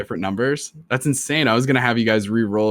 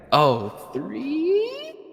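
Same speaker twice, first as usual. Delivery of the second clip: very high, swooping, drawn-out "three"; 3 dB quieter than usual. Voicing a game character reacting to a roll of three: voice going up high. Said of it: "Don't make your voice go up high like that".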